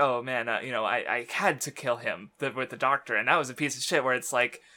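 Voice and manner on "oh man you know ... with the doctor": ordinary talk, nothing marked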